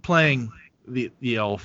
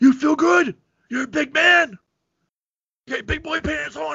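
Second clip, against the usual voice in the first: mock yelling, voice pushed way up high; 4 dB louder than usual. Recounting a movie scene to the others, imitating someone yelling.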